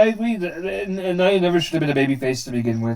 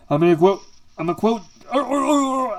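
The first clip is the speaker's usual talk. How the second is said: higher-pitched stutter, tripping over words and restarting; 5 semitones higher than usual. Reading out match results, the speaker trips while starting a quote, stuttering. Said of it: "I'm stuttering".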